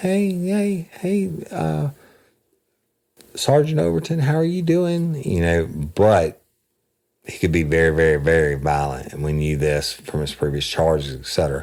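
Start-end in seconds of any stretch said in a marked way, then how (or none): 0.0-5.2 put-on tiny little girl's voice, very high. Retelling how a man greeted the sergeant, imitating his little girl voice. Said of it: "he talked in a little girl's voice".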